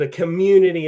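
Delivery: plain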